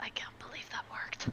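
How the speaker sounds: very soft whisper under the breath. Whispering in character to Cassidy after getting past the rope: whispering in character. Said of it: "And I whisper to Cassidy".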